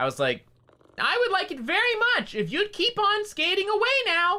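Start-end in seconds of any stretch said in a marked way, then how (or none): 1.0-4.4 squeaky, very high, silly comic voice. Retelling what the speaker said to someone, in a put-on funny voice. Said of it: "like in my funny voice".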